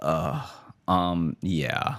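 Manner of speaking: put-on flat, deflated delivery. Retelling how a store worker answered after the mood changed: imitating a deflated reply. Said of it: "our energy's completely and totally changed".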